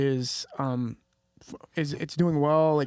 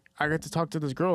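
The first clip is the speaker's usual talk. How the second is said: usual speaking voice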